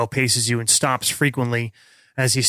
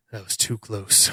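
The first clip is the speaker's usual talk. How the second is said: muttered under breath, lower and quieter; 3 semitones lower, 5 dB quieter than usual. A sergeant walks past one of the group after the action, under his breath. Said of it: "and under his breath he says".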